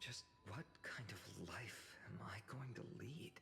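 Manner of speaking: muttering under the breath. A character speaking aside to himself during a conversation, mumbling to himself. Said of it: "What are you mumbling to yourself now?".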